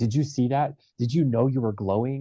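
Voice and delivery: fast, gushing, starstruck, freaked-out voice, acted out. Retelling questioning the man who saved their life: retelling own freaking out. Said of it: "freaking out".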